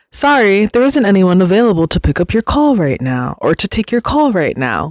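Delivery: robotic, machine-like automated recorded-message voice. Speaker retelling picking up a phone call, imitating an automated phone voice. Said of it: "an automated voice goes".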